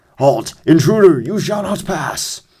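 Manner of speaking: generic video-game robot voice. Narrating a game, the speaker voices the enemy guard in a generic robot voice. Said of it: "Generic robot dialogue".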